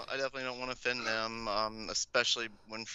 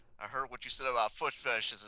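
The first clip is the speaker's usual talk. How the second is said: ordinary talk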